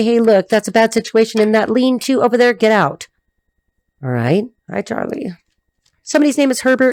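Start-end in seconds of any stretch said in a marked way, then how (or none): none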